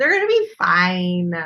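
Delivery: loud, self-soothing, reassuring voice. Joking that a rival team will be fine: high-pitched voice. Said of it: "That's so high pitched".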